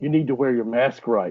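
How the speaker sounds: hushed, confidential stage whisper. Retelling what a lady in a grocery store said: imitating a half-whisper. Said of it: "just whispers in my ear".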